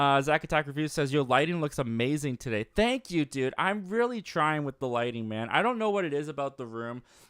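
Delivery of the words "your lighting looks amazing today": ordinary talk, nothing marked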